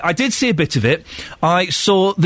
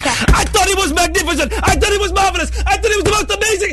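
put-on shrill, high, rapid excited shouting, rattled off; 14 semitones higher than usual. Retelling a judge banging the table: imitating someone shouting excitedly. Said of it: "he starts banging the table... he's shouting".

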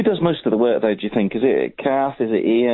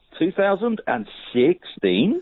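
drawn-out radio DJ voice, pitched up; 7 semitones higher than usual. Reading out a podcast date on air: Chris Tarrant DJ voice. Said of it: "a Chris Tarrant D J voice".

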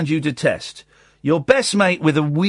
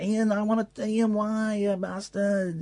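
put-on teary, tearful tone, much quieter; 4 semitones higher, 9 dB quieter than usual. Mocking the other speaker's reaction over a T-shirt gift, mock teary pleading. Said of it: "you got all teary and emotional".

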